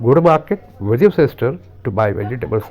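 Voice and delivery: three chunks, pauses after market and sister. Teaching English sentence phrasing in three pieces: pauses after market and sister. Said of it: "तो तीन टुकड़ों में मैंने इसको बांट दिया।".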